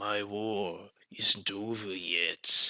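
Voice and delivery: menacing villain voice, low and slow.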